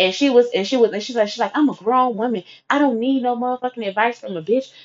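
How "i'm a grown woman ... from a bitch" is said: put-on raised, argumentative voice. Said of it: "So she raising her voice".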